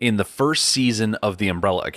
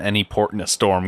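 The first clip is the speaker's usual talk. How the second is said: ordinary talk, nothing marked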